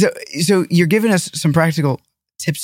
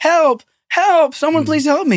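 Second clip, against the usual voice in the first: put-on, very high, loud shouting; 12 semitones higher than usual. Telling a story of a sage clinging to a pillar, retelling a yell for help. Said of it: "starts yelling".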